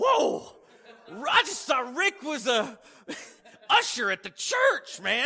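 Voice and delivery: amazed, disbelieving, high, loud laughing exclamation.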